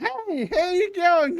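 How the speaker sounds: extremely annoying voice. Imitating an annoying psychic voice in a stealth scene: most annoying voice ever. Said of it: "That's the most annoying fucking voice of all time".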